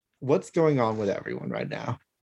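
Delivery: ordinary talk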